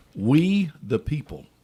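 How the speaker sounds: every word enunciated, clearly pronounced, declaimed reading. Reading the Constitution aloud after being told to be more pronounced: more pronounced. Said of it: "That needs to be more pronounced".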